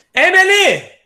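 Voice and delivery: high, loud shouting.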